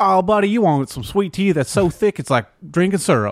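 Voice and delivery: badly done, very high put-on voice. Retelling what a buddy from Mississippi said about sweet tea: terrible impression of Charlie. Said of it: "terrible impression".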